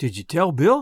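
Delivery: caring, tender, gentle voice. Reading a story aloud, a woman asks gently: tender voice. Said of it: "in a kind of tender voice".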